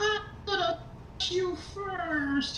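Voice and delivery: weird, strange, very high-pitched shout. Voicing an iced figure with an angry stare, strange high-pitched yell. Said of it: "It just kind of yells out in this strange, high pitched voice".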